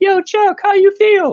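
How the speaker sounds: very high, loud, squeaky helium voice. Retelling how the driver turned around and spoke to him, imitating a helium-high voice. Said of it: "it sounded like he was inhaling helium".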